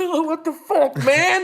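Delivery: very high, loud, shocked squealing outburst.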